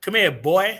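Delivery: loud, commanding voice with heavy cadence. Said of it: "It's the cadence behind it".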